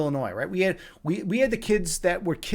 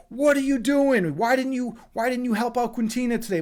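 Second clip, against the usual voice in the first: furious, angry screaming, pitched high; 7 semitones higher than usual. Quoting the transportation director screaming at the speaker at work: imitating angry screaming. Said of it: "just starts screaming at me".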